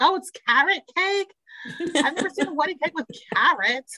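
put-on Boston accent. Recapping a wedding show, quoting Elijah at the cake cutting in a Boston accent. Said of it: "in their Boston accents".

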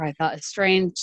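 ordinary talk, nothing marked

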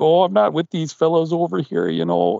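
put-on accent from Minnesota. Describing a film scene, quoting a character talking in a full-on Minnesotan accent. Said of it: "he goes into like the full-on Minnesotan accent".

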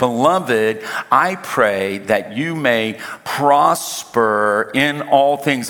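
slow, deliberate reading, word by word.

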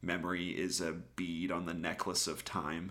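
ordinary talk

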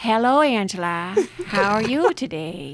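put-on elderly woman voice with Midwestern accent. Calling a friend in different voices, elderly Midwestern woman voice. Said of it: "latest favorite is an elderly woman where I'm like".

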